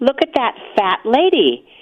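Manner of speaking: loud, blurted, play-acted small child voice. Recalling walking with her mommy and seeing a woman ahead: retelling in a pretty loud voice. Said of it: "probably in a pretty loud voice".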